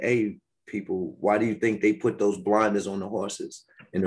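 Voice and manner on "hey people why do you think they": usual speaking voice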